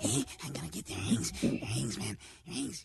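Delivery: rough, creaky creature voice. Describing Smeagol from Lord of the Rings: Smeagol impression. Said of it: "Then he's just like".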